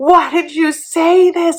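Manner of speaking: high, slow, shocked gasping delivery.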